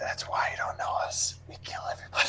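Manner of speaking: breathy, hushed whisper. Voicing a character who whispers into a gang member's ear: whispering. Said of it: "Matthias whispers into one of them's ear".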